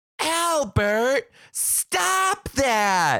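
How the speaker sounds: put-on very high, loud, carrying call. Speaker recounts a woman looking right at them, retelling Moonspell's loud call. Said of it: "Moonspell goes so loud".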